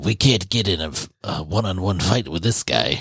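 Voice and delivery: put-on gravelly low voice. Retelling what she said after falling off a wall, in a gravelly Titan voice. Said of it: "in the sexiest Titan voice, that just sounds like all gravelly".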